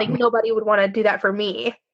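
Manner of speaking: ordinary talk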